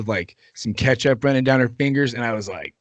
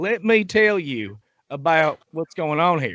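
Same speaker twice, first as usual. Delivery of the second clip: fake rural drawl; 4 semitones higher than usual. Talking about dumb policies, suddenly switching into a redneck voice. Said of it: "all of a sudden a redneck voice comes out".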